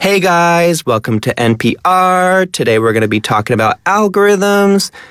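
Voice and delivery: high, upbeat, up-talking influencer accent.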